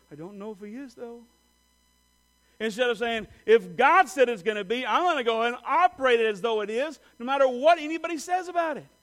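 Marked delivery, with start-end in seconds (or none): 0.1-1.2 hushed, much quieter. Acting out a private aside about believing God, said real quietly. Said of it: "and real quietly say".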